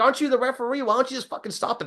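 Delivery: high, exasperated put-on yell.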